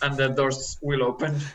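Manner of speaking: ordinary talk, nothing marked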